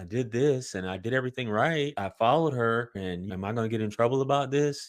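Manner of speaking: put-on worried, nervous voice. Retelling what a new officer said when handing over a ticket: imitating a worried voice. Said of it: "you could hear the worry in his voice".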